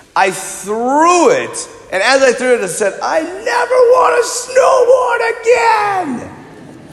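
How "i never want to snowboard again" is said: put-on very high-pitched crying, wailing scream. Retelling throwing off the snowboard, acting out own screaming and crying. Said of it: "Screaming, crying, being a little baby about it".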